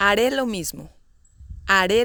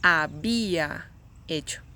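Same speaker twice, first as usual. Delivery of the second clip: syllable bi in había given heavy stress. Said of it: "The stress goes in B".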